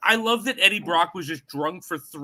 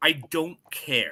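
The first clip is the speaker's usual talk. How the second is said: very firm, final, emphatic; 4 semitones lower than usual. Giving an opinion on the Venom movies to the others: said very firmly. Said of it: "I'm gonna say it very firmly".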